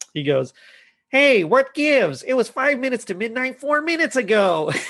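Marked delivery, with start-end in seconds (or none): 1.1-4.7 high-pitched, pedantic, smart-alecky busybody tone. Retelling a scene where the conductor announces the time, doing a Know-It-All impression. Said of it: "I'm gonna try my best know it all here".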